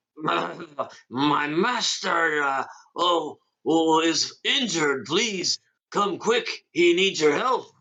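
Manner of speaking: high, slow put-on talking-horse voice. Voicing a horse calling for help for its master: imitating the horse. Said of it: "I was trying to imitate the horse".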